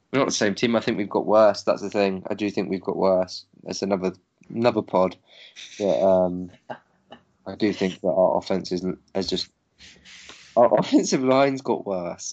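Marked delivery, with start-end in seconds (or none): 10.6-12.4 pitched-up words breaking on held-back laughter. Admitting something to another speaker in conversation, laughing while talking. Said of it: "I can barely say it without laughing".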